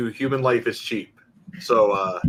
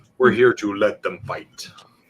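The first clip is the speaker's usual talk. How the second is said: rough, poorly done put-on film-star voice; 4 semitones lower than usual. Doing a Ken Watanabe impression while explaining a game rule. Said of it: "That was my best Ken, Ken Watanabe impression".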